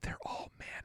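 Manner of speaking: hushed, barely voiced, very quiet whisper. Revealing a surprising finding to the others in a whisper. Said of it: "I'm gonna whisper it".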